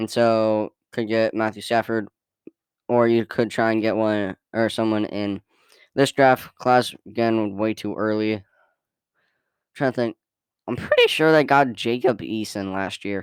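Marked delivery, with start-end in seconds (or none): 10.7-13.2 voice breaking mid-word. Discussing a team's quarterback options in the draft, with a voice crack. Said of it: "that was a terrible voice crack".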